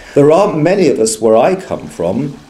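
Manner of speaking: ordinary delivery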